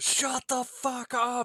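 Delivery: emotional, heated outburst, very high-pitched and very slow. Retelling a movie line said before the speaker gets punched: imitating Mark's emotional line. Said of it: "delivered with a little bit more emotion".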